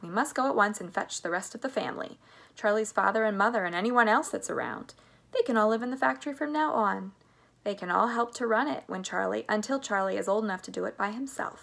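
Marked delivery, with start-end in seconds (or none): none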